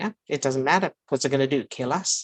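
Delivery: plain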